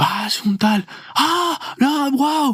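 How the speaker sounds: high-pitched gushing, adoring voice. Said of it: "una fan tuya nos decía".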